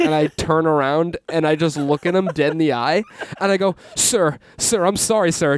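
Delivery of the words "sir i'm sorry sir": fearful, cowed, sheer fright in voice. Retelling apologizing to an authority figure who stopped him, imitating a fearful apology. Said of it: "Just to complete fear".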